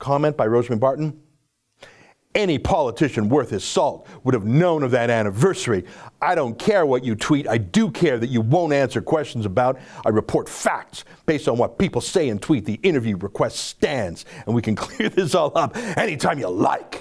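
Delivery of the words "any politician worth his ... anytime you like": fast, mock-theatrical dramatic reading. Reading a journalist's comment aloud, quoting in own dramatic voice. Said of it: "I said that in my own dramatic voice".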